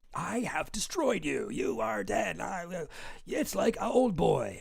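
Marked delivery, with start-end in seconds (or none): 0.1-2.3 hateful, rough, creaky anime-villain voice. Retelling how a bothered guy was speaking, in a mock anime-villain voice. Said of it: "he still is talking like an anime villain".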